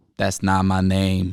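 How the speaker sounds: flat, expressionless delivery. Retelling how a man corrected a mispronounced name: imitating Lamone's deadpan reply. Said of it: "I could, like, hear the deadpan".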